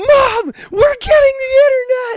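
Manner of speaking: very shrill, very loud thrilled excited yell. Recalling a childhood baseball game, the speaker yells to their mom, retelling an excited shout. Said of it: "And I turn to my mom and I go".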